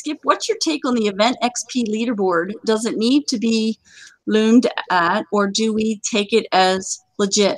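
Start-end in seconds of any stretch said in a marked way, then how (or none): none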